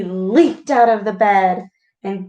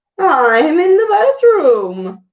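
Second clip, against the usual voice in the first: odd, quavering, high-pitched wolf voice; 7 semitones higher, 4 dB louder than usual. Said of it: "replied the wolf in a strange, wobbly voice".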